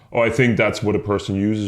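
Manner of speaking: ordinary talk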